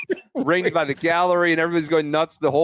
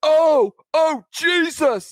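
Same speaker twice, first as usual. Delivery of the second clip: play-acted, shrill, startled shout, very high; 12 semitones higher, 3 dB louder than usual. Retelling a crowd member's reaction as the ball comes in: imitating a spectator shouting. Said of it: "Like, shouts it".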